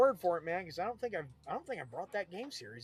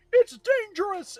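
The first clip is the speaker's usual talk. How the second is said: put-on announcer voice, yelling; 13 dB louder than usual. Recalling a racing game's car select, imitating an announcer yelling. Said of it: "the announcer would always yell".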